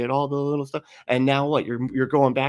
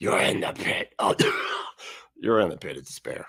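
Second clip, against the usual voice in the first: deliberately frightening, creepy, spooky put-on voice; 7 semitones lower, 3 dB quieter than usual. Mocking a man's way of talking by recalling a movie scene, scary voice from The Princess Bride. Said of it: "trying to do a scary voice".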